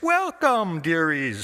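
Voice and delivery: sweetest, friendliest, warmly welcoming voice. The narrator reads the meanie stepping out to welcome hungry visitors: her friendliest voice. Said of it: "she said in her friendliest voice".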